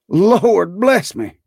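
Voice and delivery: very high gasp, breath gone, breathless cry. Reading the gentleman's reply after Scrooge whispers in his ear, breathless cry. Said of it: "cried the gentleman, as if his breath were gone".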